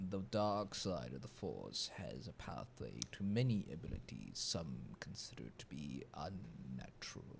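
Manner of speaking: very low, deep, hushed, sinister, drawn-out rasp. Doing an impression after being told it needs more rasp, raspy Palpatine voice. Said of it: "I can actually do a, a Palpatine voice".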